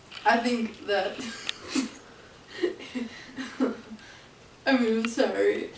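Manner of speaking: loud laughter passed off as fake sobbing. Answering an interview question in character, laughing while trying to fake crying. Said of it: "I'm laughing, but I'm trying to make it look like I'm crying".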